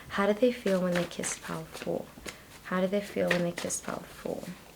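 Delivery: fast, hushed whisper under the breath. Speaker whispers questions because their whole family is home, whispering. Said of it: "I'm whispering because my whole family is home".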